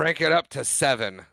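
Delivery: ordinary talk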